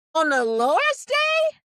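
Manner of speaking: put-on high, slow, loud old woman voice. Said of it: "And that's what it sound like".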